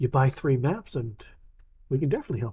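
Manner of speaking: soft, secretive, hushed half-whisper, very quiet. Will comes down close to answer the player's request for help, half-whispering. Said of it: "Will comes down whispering to you like you're whispering to him".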